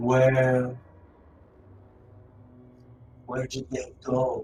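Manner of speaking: deep, dark, slow voice. Voicing an unseen figure in a dark corner questioning him, deep, dark voice. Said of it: "you can hear a deep, dark voice".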